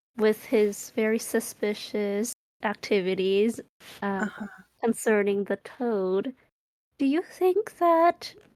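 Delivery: hushed, secretive half-whispered aside. Playing a character who half-whispers a suspicion to Cyril: half-whispering. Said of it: "Akaria kinda whispers to s-".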